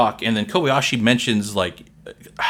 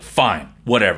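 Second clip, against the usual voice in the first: mock-curt, short, dismissive delivery; 3 semitones lower than usual. Describing a woman cutting someone short, imitating a curt reply. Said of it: "She's short".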